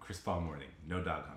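very soft, low, hushed, seductive sultry voice. Asked to take the line again from the top with sultriness: sultry. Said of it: "I want to hear the sultriness".

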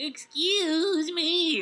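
put-on voice squeezed up very high. Recalling how a cartoon voice sounded: Urkel voice.

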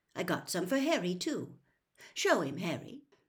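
ordinary delivery

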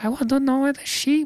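very high, terrible, deliberately bad put-on voice. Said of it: "I'm doing a terrible impression".

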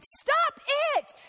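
very high, piercing scream. Telling a story about a friend's dream, quoting his wife waking him; imitating a scream.

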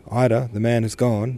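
ordinary talk

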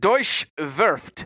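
put-on German name said with Russian accent. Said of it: "say this probably in a Russian accent versus a German one".

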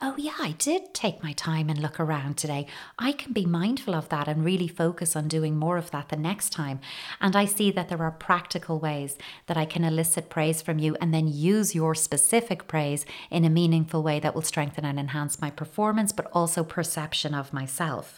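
usual speaking voice

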